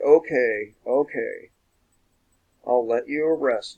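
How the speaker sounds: dripping with sarcasm, acted out. Retelling what he told a deputy who chased him around his yard, mock-sarcastic. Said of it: "In a really sarcastic kind of voice".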